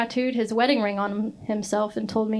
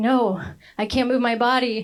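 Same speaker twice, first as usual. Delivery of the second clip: imitated panicking, panicked voice; 3 dB louder than usual. Retelling a friend's words while high: imitating someone panicking. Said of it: "he started freaking out".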